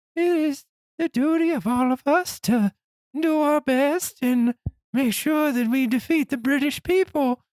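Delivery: squeaky, very high voice. Imagining George Washington as a giant with a silly voice: squeaky George Washington voice. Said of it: "squeaky voiced monster".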